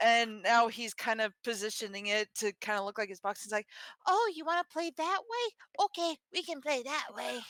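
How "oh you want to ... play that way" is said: put-on very high-pitched young boy voice. Voicing a figure posed like a boxer, the speaker does a young boy voice. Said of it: "trying to do like a more young boy sound".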